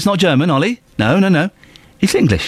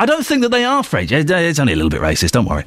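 ordinary talk

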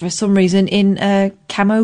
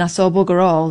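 usual speaking voice

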